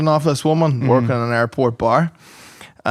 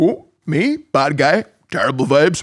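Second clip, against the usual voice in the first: slow yet wired-sounding voice; 3 semitones higher than usual. Retelling a mate from a music festival who kept repeating himself: imitating a coked-up guy. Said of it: "the guy was like coked up and he just kept going".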